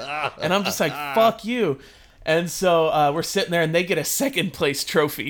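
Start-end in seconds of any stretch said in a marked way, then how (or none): 0.9-1.8 play-acted defiant, taunting yell. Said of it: "we're yelling back and forth".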